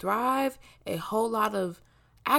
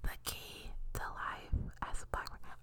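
very quiet, barely audible hushed whisper. Telling the audience a secret, whispering it. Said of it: "I have to whisper it".

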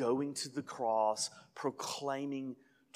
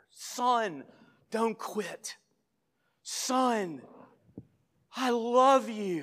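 very slow, raised, drawn-out, loving encouraging call; 10 semitones higher, 6 dB louder than usual. Retelling a father cheering his slow son on: retelling a louder cheer. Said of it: "he gets a little bit louder".

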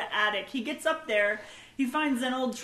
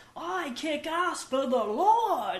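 put-on clumsy New Zealand accent, drawn-out "Lord"; 4 semitones higher than usual. Quoting the best line in the movie, in a bad New Zealand Kung Fu Priest impression. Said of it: "that's my terrible New Zealand impression".

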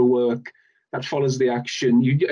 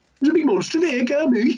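exaggerated Dudley accent. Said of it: "stereotypical Dudley than, than Birmingham".

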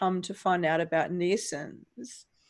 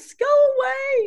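high, loud, frightened yell. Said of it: "and he yells".

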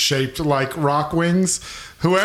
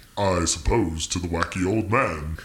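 very deep, soft, rumbling bass voice; 9 semitones lower, 5 dB quieter than usual. Storyteller voicing the gnome king answering the table's toast, very deep bass voice. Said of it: "In a very deep, non-gnomish voice".

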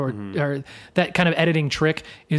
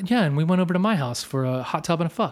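acted matter-of-fact, unbothered delivery; 2 semitones higher than usual. Retelling a comedy film moment: Chris Klein deadpan impression. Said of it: "Just the deadpan delivery".

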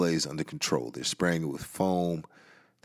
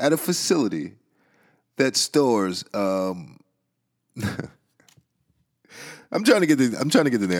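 pitched-up talk, holding back laughter; 6 semitones higher, 5 dB louder than usual. Reporting on a chemical fire, trying not to laugh: stifling laughter while talking. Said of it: "I'm trying to get through this without laughing".

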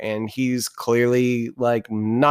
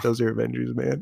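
put-on whisper; 4 dB quieter than usual. Retelling a film scene where an officer tells another: imitating an officer whispering. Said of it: "sort of whispers to him".

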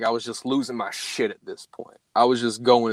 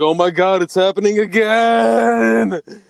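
very high, slow, drawn-out panicked cry; 9 semitones higher, 7 dB louder than usual. Retelling how a friend reacted to knocking on the trunk: imitating a friend freaking out. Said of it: "He's, like, freaking out".

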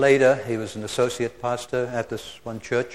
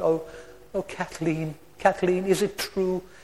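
put-on plaintive little voice, much higher, slower; 6 semitones higher, 3 dB quieter than usual. Retelling what a woman said through the earphone, imitating a plaintive little voice. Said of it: "this plaintive little voice".

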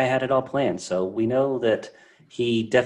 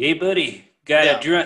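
fake cop voice with put-on southern accent; 4 semitones higher, 3 dB louder than usual. Retelling how a character poses as a cop to lure another: put-on southern accent. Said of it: "He uses like a southern voice".

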